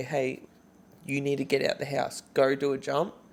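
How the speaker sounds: ordinary talk, nothing marked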